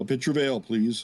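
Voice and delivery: loud put-on deep voice. Playing Musashi ordering ale at the fire: loud, fakely deep voice. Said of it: "kinda fakely deep voice".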